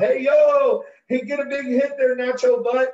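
put-on, very high-pitched screamed holler. Retelling what mom called out as he went up to bat: imitating a scream. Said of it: "my mom screams out".

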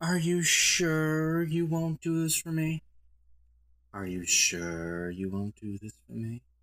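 silky, seductive voice with "sure" drawn out. Reviewer showing how Aphrodite should sound instead of sassy, seductive silky voice. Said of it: "She's seductive. Silky. Smooth".

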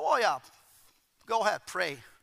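mocking, dismissive, sarcastic swooping sing-song. Retelling own reply to an offer of prayer, imitating own sarcastic reply. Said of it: "But I was very sarcastic".

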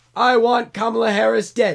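shouting at full volume, very loud and high. Speaker shows the other speaker how Joe Biden talks, shouting Joe Biden impression. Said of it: "That's how Joe Biden talks".

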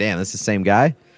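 ordinary delivery

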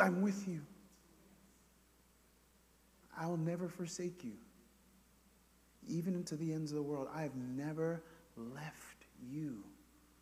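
small, still, barely-there, very soft half-whisper. Voicing God speaking through the word: imitating God's half-whisper. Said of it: "he whispers just a small little whisper".

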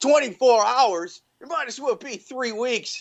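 put-on high-pitched yell. Speaker recapping a movie scene where a soccer mom stands up: retelling a soccer mom's yell. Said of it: "stands up and yells".

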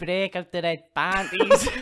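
terrible fake Scottish accent. Quoting exactly how a man says a line: bad Scottish accent. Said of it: "he says it exactly like this".

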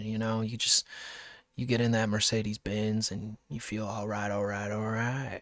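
really low, deep voice. Trying to keep it really low: McConaughey impression. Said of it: "if I keep it really low".

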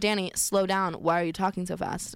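ordinary delivery

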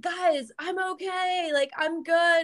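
high, half-yelling voice. Telling about wiping out on a paddleboard wave, retelling their own yelling. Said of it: "kind of yelling".

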